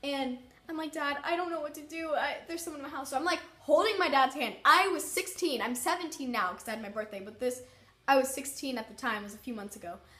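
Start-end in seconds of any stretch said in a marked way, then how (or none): 0.9-3.1 acted-out tearful sobbing, crying voice. Retelling begging dad for help after a scare: retelling own sobbing. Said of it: "I'm sobbing".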